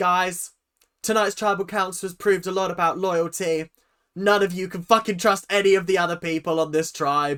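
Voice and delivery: put-on snarky voice. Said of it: "snarky comments at the end".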